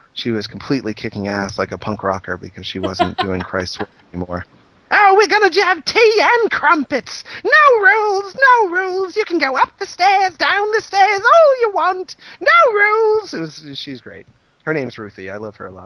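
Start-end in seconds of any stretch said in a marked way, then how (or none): 4.9-13.3 put-on very high, slow, old British lady voice. Quoting an aunt during a visit, imitating Ruthie. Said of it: "like an old British woman".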